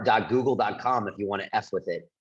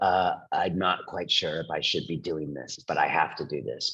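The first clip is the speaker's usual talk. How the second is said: low, uneasy, fearful, frightened voice; 7 semitones lower, 4 dB quieter than usual. A speaker mimics scared AI creators to an audience; imitating a scared voice. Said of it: "you can hear it in their voice".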